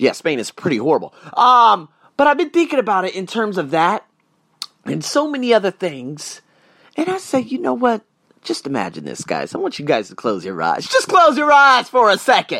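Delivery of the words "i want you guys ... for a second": thick, broad down-home country accent, swooping. Addressing the viewers as guys, the speaker asks them to close their eyes, country accent. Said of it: "I'm sounding country as hell this morning".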